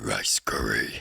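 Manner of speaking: very low, rough, zesty demonic voice. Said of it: "In a demonic, zesty voice".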